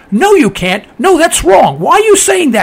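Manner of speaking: high, rising, yelling scream. Recalling the day after 9/11, the speaker is retelling screaming at the tv. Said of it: "I'm screaming at the TV set saying".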